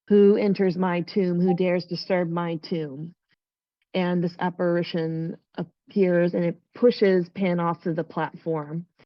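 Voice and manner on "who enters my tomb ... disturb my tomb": normal talking voice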